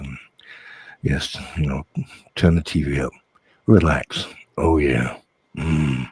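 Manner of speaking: put-on, fake cosy intimate voice, right on the mic. Showing the voice that upset Tina: put-on close-to-the-mic voice. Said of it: "started talking like this".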